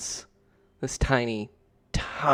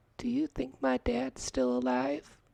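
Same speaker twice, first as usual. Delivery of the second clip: tiny, very high, soft, creaky voice; 13 semitones higher, 6 dB quieter than usual. Narrator reading a story, voicing Lupe asking Joe a question: Lupe's very small voice. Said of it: "a very small voice asks".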